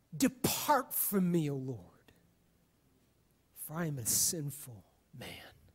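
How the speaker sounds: put-on quavering voice, very deep and soft. Retelling Simon Peter on his knees before Jesus: retelling Simon Peter's trembling voice. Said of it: "trembling in his voice says".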